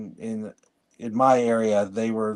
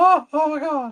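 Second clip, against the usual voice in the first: put-on, very high-pitched, frantic, panicked voice. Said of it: "that's my brother's impression of his boss".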